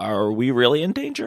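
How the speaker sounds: quiet, low, close-in murmur. In a role-play, taking the knife from another character and asking: quiet. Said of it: "I kind of say quietly to you".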